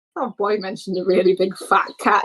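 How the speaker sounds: plain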